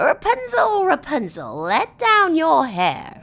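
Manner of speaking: very loud, high, shrill gravel-in-a-cup rasp. Reading a story: a voice from below calls up to Rapunzel, raspy like gravel. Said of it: "a raspy voice that sounded like gravel in a cup".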